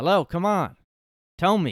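loud, high, pushy, demanding yell. Retelling how someone yelled at subway riders who weren't answering, retelling a yell. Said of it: "yelled at people that weren't answering".

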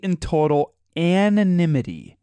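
the word "anonymity" drawn out slowly. Reading out an article's details, saying "anonymity" slowly. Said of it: "I say the word slow".

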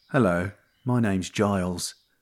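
terrible fake London accent. Reacting to the name Giles, putting on a terrible London accent. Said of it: "And you sound like you're from London".

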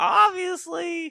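loud, slow, belted-out mock announcer voice.

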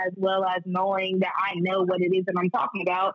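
ordinary talk

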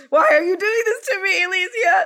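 acted tearful crying. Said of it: "And I'm just crying in a ball on the floor".

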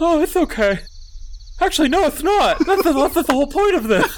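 very high, squeaky kobold creature voice.

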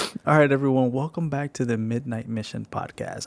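words broken up by laughter. Welcoming listeners back to the podcast, laughing while talking. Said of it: "I'm laughing because I keep forgetting".

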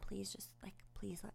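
put-on begging voice. Retelling being barricaded in the apartment by a man, reenacting begging him. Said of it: "I'm just begging him".

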